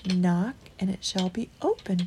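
ordinary delivery

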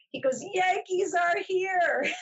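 mock yelling. A speaker recalls a man calling out at the elevators, retelling a yell. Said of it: "he yells out".

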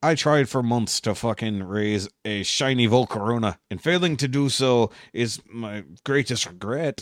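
terrible attempted Scottish accent. Quoting an SNL Celebrity Jeopardy sketch, the speaker attempts Sean Connery's Scottish accent. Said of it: "It was trying to do Scottish".

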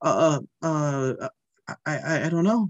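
acted-out stammering, halting stutter. Recalling being asked what name they wanted, retelling their stammering. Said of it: "I stammered".

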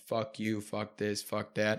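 mock mumbling under breath. Retelling what the other driver muttered while pumping gas: imitating someone mumbling under breath. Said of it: "he's just mumbling under his breath".

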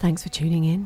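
put-on seductive, sexy voice. Reading the episode's studio credit line in a put-on sexy voice. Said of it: "Do you want me to do my sex voice?".

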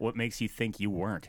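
soft, low, dead calm, matter-of-fact and dismissive. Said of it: "he said it so calmly too, and so matter of fact".

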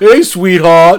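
put-on cheesy, loud, laid-on Philadelphia accent. Imitating an actor who can't act, in a Philadelphia-like accent impression. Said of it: "It almost reminded me of like something from Philadelphia".

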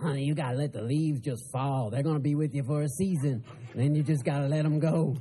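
low, dropped-down put-on character voice. Speaker giving advice about letting people go, doing a Madea impression. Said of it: "That's my Medea impression".

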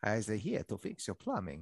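bad, swooping put-on Italian or Transylvanian-sounding accent. Joke with your podcast co-hosts about Italian plovers, in a bad Italian accent, sounding Transylvanian. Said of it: "That sounded a bit more Transylvanian".

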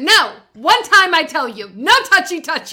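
forceful, loud, no-nonsense, aggressive tone. Retelling warning off grabbing actors: imitating own aggressive warning. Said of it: "I was so aggressive".

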